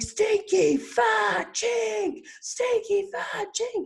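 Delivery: acted very high, slow, tearful bawling yell. Recalling being made to yell it on stage, retelling a tearful yell.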